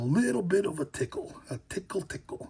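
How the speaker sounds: breathy, all-breath whispered put-on stage whisper. Joking about a tickle in the throat: Macho Man voice. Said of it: "I had to go into the Macho Man voice and say tickle".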